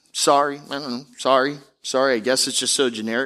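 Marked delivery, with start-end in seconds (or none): 0.2-2.2 offhand, careless tone, much slower. Speaker shows how some people apologize as if it doesn't matter, offhand, careless sorry. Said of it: "like it doesn't even matter".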